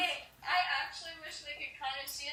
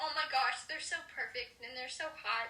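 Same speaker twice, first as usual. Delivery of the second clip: usual speaking voice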